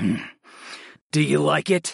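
rough, drawn-out growl, very slow. Narrator reading the hero's question to the goddess, growled. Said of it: "I growled".

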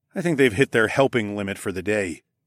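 plain

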